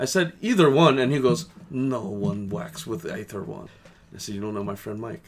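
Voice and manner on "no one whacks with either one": put-on Ukrainian accent, soft and slow. Retelling a man's reply in a story, Ukrainian accent. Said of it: "You have a great Ukrainian accent".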